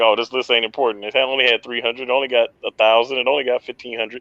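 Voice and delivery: ordinary talk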